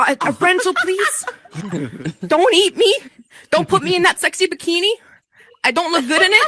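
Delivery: put-on cowering, terrified pleading, high and swooping. Retelling asking a rental man for a jet ski: imitating own frightened voice. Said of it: "cowering in fear".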